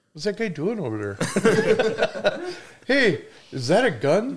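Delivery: very high, slow, swooping talking-deer voice. Hunter imagines what a deer would say, in a talking deer voice. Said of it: "I always like to put like a human voice to deer".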